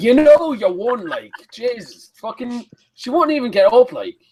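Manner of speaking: put-on Irish accent. Joking about how Irish people talk, putting on an Irish accent. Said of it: "that's how you speak Irish".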